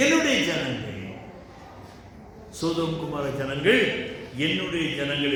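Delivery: ordinary talk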